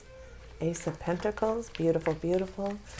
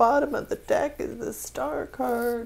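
crying, tearful voice; 5 semitones higher than usual. Reading tarot cards for the listeners, crying. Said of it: "Sorry I'm crying".

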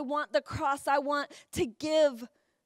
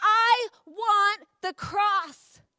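mock, very slow, drawn-out, high, top-of-the-lungs shout; 6 semitones higher, 4 dB louder than usual. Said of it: "shouting at the top of their lungs".

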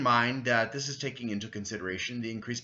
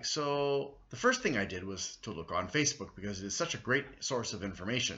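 ironic, saying the opposite; 2 semitones lower than usual. Explaining how they started researching a claim, sarcastic. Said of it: "That's sarcasm".

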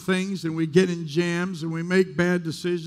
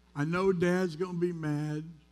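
ordinary delivery

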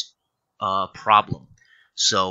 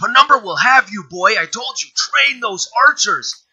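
very high, loud barked delivery; 13 semitones higher, 8 dB louder than usual. Narrating a scene, a man turns to walk away and speaks again; barking. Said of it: "he barks".

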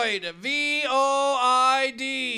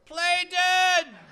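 high, loud shouting; 6 semitones higher than usual. Speaker retelling his father's answer while a buzzard chased him; retelling father's yell. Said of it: "And my father yells back".

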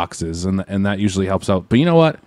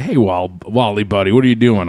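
ordinary talk

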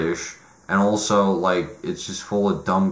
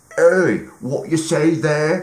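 put-on British accent, higher pitch; 8 semitones higher than usual. Mocking dialogue from a British comedy film: British accent. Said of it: "talking with, with British accents".

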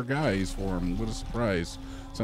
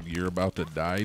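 ordinary talk, nothing marked

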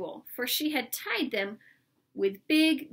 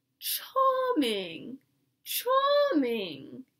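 affected, sing-song put-on voice unlike natural voice; 2 semitones higher than usual. Walking down the road, she speaks in an affected put-on voice. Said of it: "in a voice that didn't sound at all like her own".

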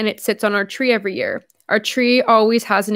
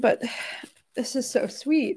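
crying, hushed, almost whispered, tearful; 10 dB quieter than usual. On a live stream, after reading a kind letter aloud: crying. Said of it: "I didn't mean to cry on the live stream".

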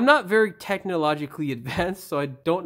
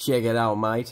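fake Aussie accent, a best attempt; 6 semitones lower than usual. Speaker shows off the best accent they've got: put-on Australian accent. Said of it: "It's the best Australian accent I've got, mate".

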